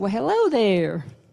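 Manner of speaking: loud put-on southern North Carolina accent. Retelling a woman greeting them in a kitchen: imitating a North Carolina southern accent. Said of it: "with a southern accent from this, from North Carolina".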